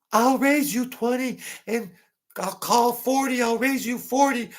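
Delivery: very high-pitched man's crybaby voice. Retelling what a mafia guy said at a card game, imitating a high-pitched voice. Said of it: "He had a high-pitched voice".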